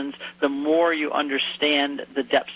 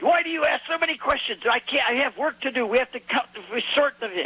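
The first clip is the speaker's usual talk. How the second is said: put-on Hebrew accent, much higher; 10 semitones higher than usual. Retelling what a fisherman he questioned said, thick Hebrew accent. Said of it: "In a very thick Hebrew accent".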